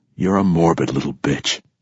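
ordinary delivery

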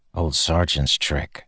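whispering. Narrator reads Kaladin answering Syl as he leaves the kitchens, whispered. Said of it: "Kaladin whispered".

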